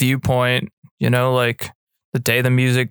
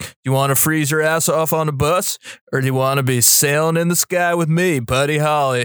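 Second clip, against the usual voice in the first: mock bro voice, higher; 3 semitones higher than usual. Retelling how a film character came across, imitating a bro-ish guy. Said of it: "it kinda came across like that".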